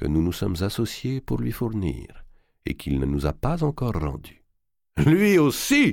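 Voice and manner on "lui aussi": very high, sudden crying out. A lord reacts to the banker's account of an unpaid royal loan, exclaiming. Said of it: "s'écria D'Artois".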